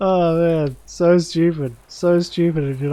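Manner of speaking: slow speech broken up by laughter. Reacting to something silly in a game: laughing while talking. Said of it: "I can't stop laughing".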